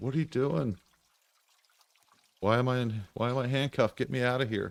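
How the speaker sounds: put-on faint, soft voice. Retelling what a handcuffed woman said with a flashlight in her eyes, retelling a faint, soft voice. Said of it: "very faint, like, uh, very soft spoken".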